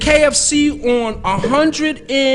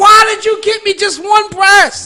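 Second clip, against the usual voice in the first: put-on scream, higher and louder; 7 semitones higher, 6 dB louder than usual. Retelling his reaction when the box held one breast: retelling his own scream. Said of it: "I'm screaming like".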